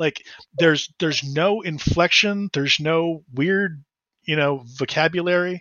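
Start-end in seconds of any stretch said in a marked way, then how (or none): none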